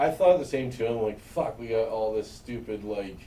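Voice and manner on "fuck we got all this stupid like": normal talking voice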